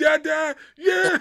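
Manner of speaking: put-on excited kid's cheer, high, loud, and slow. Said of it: "my sons would be like".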